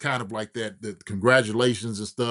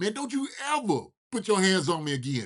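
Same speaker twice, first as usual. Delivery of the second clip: pitched-up, hollering yell; 8 semitones higher than usual. Retelling yelling at an opponent while choking him on the field: imitating own past yelling. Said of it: "I'm over yelling at him".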